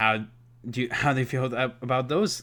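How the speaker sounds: stuttering, stumbling, tripping over and repeating words. Asking the audience how they feel about those facts, stuttering. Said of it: "I'm like stuttering right now".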